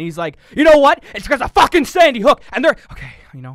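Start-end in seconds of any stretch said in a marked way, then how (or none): 0.6-2.8 very loud, very high, put-on enraged ranting. Imitating Alex Jones as he gets worked up: imitating Alex Jones getting angry. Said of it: "he gets really angry".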